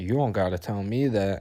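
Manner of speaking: plain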